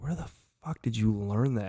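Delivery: normal talking voice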